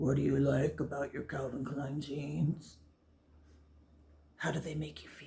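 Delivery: mock creepy, low, hushed, unsettling voice. Act out the man who asked you questions about your jeans, imitating a creepy voice. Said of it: "asking these questions like in a creepy voice".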